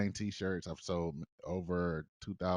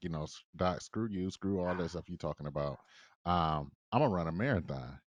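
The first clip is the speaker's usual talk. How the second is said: ordinary talk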